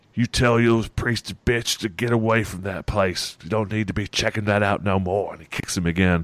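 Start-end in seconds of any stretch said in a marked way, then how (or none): 0.2-5.4 menacing, bullying, threatening thug voice. Describing a scene, the speaker voices the man kicking the priest. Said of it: "you just kind of hear in his voice".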